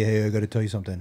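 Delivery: plain, offhand, just-talking voice. Retelling how his son told him something on a night walk: imitating his son's voice. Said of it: "that's your voice".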